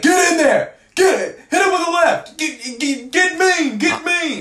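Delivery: shrill high-pitched screaming. Retelling a fan yelling at the cage during a fight: imitating someone screaming. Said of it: "he was just screaming".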